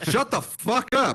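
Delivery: overly aggressive. Taking a turn at telling someone to shut up as the group compares tones: too aggressive. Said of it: "There's too much. It's too aggro".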